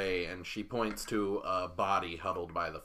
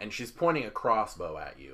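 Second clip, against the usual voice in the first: ordinary talk, nothing marked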